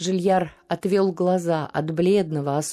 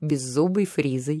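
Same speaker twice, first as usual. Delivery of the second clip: ordinary delivery, nothing marked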